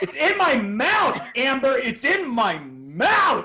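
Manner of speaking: very high, swooping shriek. Retelling the moment something went in the mouth on stage: imitating own screaming. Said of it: "I remember screaming".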